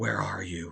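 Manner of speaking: spooky, low, eerie ghost voice calling out. Retelling a voice clip heard from the TV in the dark: imitating a ghostly voice. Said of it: "a ghostly voice going".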